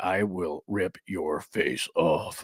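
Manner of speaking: deep, slow, low, drawn-out menacing voice. Retelling a big man's quiet threat in a low voice. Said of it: "low voice guy".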